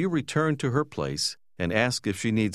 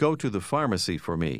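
ordinary delivery

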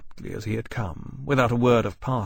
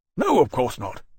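usual speaking voice

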